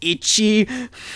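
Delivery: ordinary delivery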